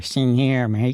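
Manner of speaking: 1950s gangster voice, out of the mouth's corner. Speaker demonstrating mouth shapes for sounds, in a 1950s gangster voice. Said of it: "This reminds me of like a 1950s gangster".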